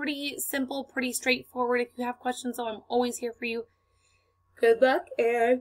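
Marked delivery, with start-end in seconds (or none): 4.6-5.6 loud words yawned mid-sentence. Signing off a video lesson on an interactive notebook, while yawning. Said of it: "you caught me mid-yawn".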